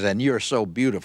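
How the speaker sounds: put-on sarcastic voice. Retelling what a man said as he passed a woman at her door: retelling a sarcastic remark. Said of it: "rather sarcastic says".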